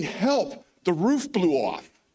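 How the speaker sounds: frantic, high-pitched, urgent screaming cry. Retelling a phone call from the shelter during a storm: imitating someone screaming. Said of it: "he's screaming".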